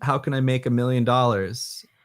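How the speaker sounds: normal talking voice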